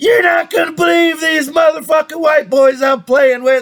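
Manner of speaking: barely getting words out laughing. Retelling Gino on the phone to a friend, imitating Gino laughing while talking. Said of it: "he's laughing so hard and he's going".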